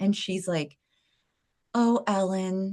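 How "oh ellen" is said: put-on dramatic leader delivery, lower pitch. Retelling a phone call from her leader: imitating a dramatic leader. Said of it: "she was so dramatic".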